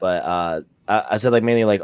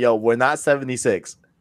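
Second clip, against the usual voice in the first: plain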